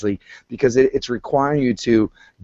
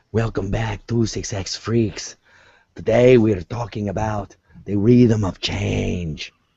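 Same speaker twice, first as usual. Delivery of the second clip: slow, dragged-out, failed creepy put-on voice, off; 3 semitones lower than usual. Opening the episode while trying out a voice: attempted Peter Lorre voice. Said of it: "I was trying to do Peter Lorre".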